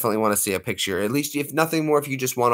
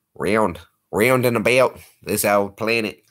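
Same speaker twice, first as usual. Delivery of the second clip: put-on Australian accent. A speaker trying a line again in another accent, Australian accent. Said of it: "how you would say world with an Aussie accent".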